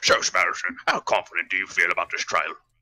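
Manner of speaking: very low, deep, loud, projected interviewer voice. Voicing a made-up scene, asking Spider-Man about the trial: Falcon voice. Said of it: "imitating that Falcon's here talking to him".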